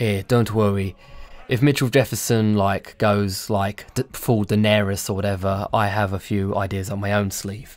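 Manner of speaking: whispering in character voice. Voicing a character leaning close to another, whispering. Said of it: "leans in close to, um, Far when he whispers".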